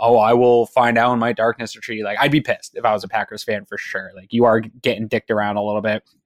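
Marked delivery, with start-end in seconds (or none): 0.0-2.0 imitated smug tone. Mocking a quarterback's talk-show answers: imitating a smug answer. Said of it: "smugly r-, answers all these questions".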